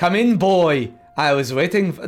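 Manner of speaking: put-on mixed Irish and Scottish accent. Voicing a game character greeting a boy: Irish-Scottish accent. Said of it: "I'm doing a Irish, Scottish thing".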